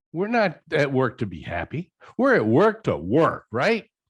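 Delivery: tongue-in-cheek, slow, swooping sarcastic tone. Objecting to the other speaker's word happiness at work: sarcastic mock objection. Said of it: "You know I'm being sarcastic there".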